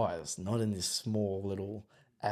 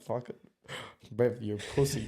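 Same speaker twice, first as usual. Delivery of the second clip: play-acted playful, joking, teasing ribbing. Retelling what a friend says when calling out mistakes: imitating a friend's joking tone. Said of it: "we'll say it in a joking way".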